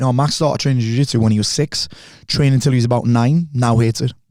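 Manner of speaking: ordinary talk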